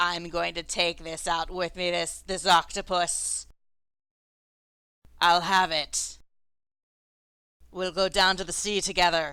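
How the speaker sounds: very loud, deep, rough, booming voice. A game master voices an unseen speaker to the players: low, gruff, deep voice. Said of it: "a low, grustling, deep voice saying".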